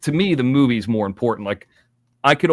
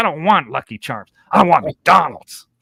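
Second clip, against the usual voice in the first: put-on bratty, childish whining kid voice; 5 semitones higher than usual. Recounting a story from work, acting out what a kid and his mom used to say; imitating a bratty little kid. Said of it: "he would always say the same things".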